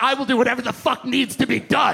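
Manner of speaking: put-on aggressive tone. Retelling own job interview answer: retelling own aggressive tone. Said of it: "brought all of the aggression from the mortgage world".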